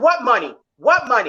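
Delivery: plain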